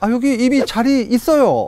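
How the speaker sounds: very high-pitched Gyeongsang dialect speech. Retelling what a caller said on an international phone call: Gyeongsang dialect. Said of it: "경상도 사투리로".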